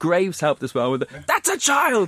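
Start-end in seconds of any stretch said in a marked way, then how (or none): 1.3-2.1 very high, screamed outcry. Retelling what a commentator said, matching the crowd: imitating someone screaming. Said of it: "that's exactly what we're screaming".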